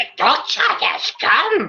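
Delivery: put-on alien sage voice. Asked for their best Yoda voice, the speaker performs it: Yoda voice. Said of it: "let's hear your best Yoda voice".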